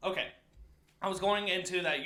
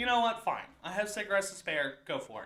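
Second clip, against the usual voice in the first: usual speaking voice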